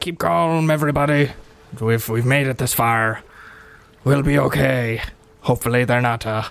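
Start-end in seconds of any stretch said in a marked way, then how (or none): 0.0-5.0 rousing call, projected loud to carry far. Voicing a ship captain addressing everyone on deck: captain yelling to the crew. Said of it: "Captain Slab yells to everybody".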